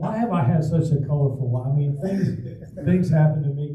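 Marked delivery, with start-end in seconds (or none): none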